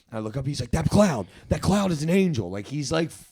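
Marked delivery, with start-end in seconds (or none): 0.7-2.4 acted, unhinged, fully losing it, high, loud manic outburst. Retelling a friend in the car pointing at a cloud: imitating someone manically losing it. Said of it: "fully manically losing it".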